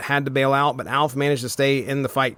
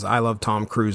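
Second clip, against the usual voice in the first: ordinary delivery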